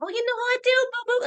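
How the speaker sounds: very high, cocky, sassy voice with swagger. Describing a game character's sassy manner: sassy Tiny Tina voice. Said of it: "a sassy, like".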